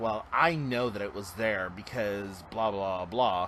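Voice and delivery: normal talking voice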